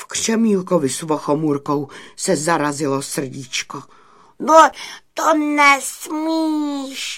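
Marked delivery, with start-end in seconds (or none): 4.4-7.2 very high, loud shouted outcry. Vochomůrka cries out to the badger Burdych, who plans to tear down the cottage: shouting. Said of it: "křikl Vochomůrka".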